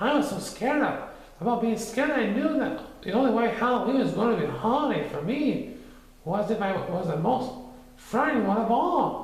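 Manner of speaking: tiny, shrunken, very high voice. Reading Piglet explaining himself, in a very small voice. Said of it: "Piglet explained in a very small voice".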